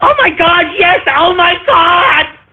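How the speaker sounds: put-on very high, starstruck, gushing teen fangirl voice. Mock the way a host interviews people, doing Jimmy Fallon as a teenage girl. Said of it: "he's like a teenage girl".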